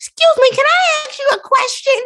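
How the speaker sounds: put-on tiny, very high little-kid voice. A parent retells the son speaking up right before they leave, Gideon's teacher's little voice. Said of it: "he has a teacher's little voice".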